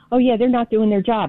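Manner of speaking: ordinary delivery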